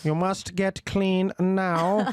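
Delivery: bad put-on German accent. Joking about a german saying about lazy people: bad put-on german accent. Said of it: "I can't do a German accent".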